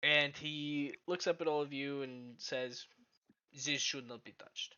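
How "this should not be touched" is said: exaggerated, outrageous French accent. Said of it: "in an outrageous French accent".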